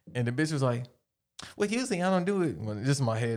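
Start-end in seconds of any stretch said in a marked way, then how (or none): 1.5-2.5 put-on, pitched-up woman's voice. Retelling a haggle over a price, imitating the woman's voice. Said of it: "That's how she sound".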